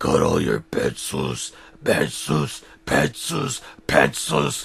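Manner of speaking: very low, rough, raspy demon-like voice. Narrating a story, voicing Henry's question in a demonic voice. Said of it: "asked in a demonic voice".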